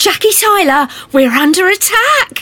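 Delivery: delighted gleeful tone. Retelling what the Doctor said when under attack: imitating the Doctor sounding delighted. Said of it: "he says it like it's the best news he's had all day".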